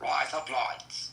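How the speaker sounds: Australian accent. Teaching another person how to say a phrase, in an Australian accent. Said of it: "Like Australian accent?".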